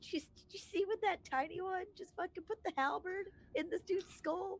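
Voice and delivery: very high-pitched, hushed half-whisper. Mid-scene, a player keeps speaking aside to Astray, half-whispering. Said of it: "I'm still whispering to Astray".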